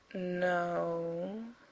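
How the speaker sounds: unhurried. A man answers a question about the residence's blueprints, slowly. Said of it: "he said slowly".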